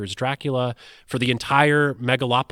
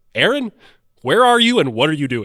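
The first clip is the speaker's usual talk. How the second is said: big, loud, booming radio announcer voice; 3 semitones higher, 6 dB louder than usual. Retelling a late-night phone call, the speaker is imitating Ken's announcer voice. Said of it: "he has this great announcer voice".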